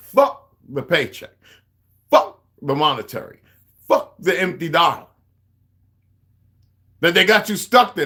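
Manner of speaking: very angry. Ranting to viewers about notes people sent: very angry. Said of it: "I'm getting so fucking, ... fucking angry".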